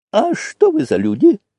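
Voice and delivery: oddly, strangely mocking tone, very high. An old man asks the tsar's officer a question, strangely mocking. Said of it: "странно насмешливо спросил старец".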